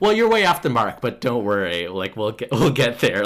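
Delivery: mock, loud, patronizing know-it-all lecturing tone. Retelling how a man lectured a woman about her own rates, mock-condescending tone. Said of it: "And very condescendingly".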